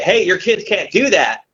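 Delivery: put-on distant call. Retelling calling across to a customer about his kids: imitating own past yell. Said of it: "I yelled across the way".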